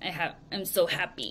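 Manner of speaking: smug, self-satisfied, breathy, whispered, gloating voice. Acting out a girl in a picture holding money: mock smug voice. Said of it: "she's smiling smugly".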